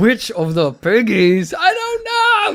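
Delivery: very high, loud, weird put-on German accent. Asking which little piggy goes to market, the speaker uses a weird german accent. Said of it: "Weird German accent for some reason".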